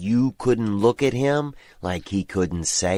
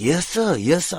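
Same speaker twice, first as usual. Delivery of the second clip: higher, deferential, subservient, servile voice; 8 semitones higher than usual. Retelling a man met while shopping, imitating someone talking like an indentured servant. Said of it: "talks like he's an indentured servant".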